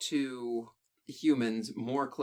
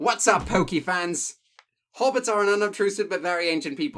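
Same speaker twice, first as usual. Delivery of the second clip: very loud, high-pitched, not-so-good put-on British accent; 6 semitones higher, 8 dB louder than usual. Discussing Tolkien's hobbits, the speaker tries reading in a not-so-good British accent. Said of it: "I can't do a British accent very well".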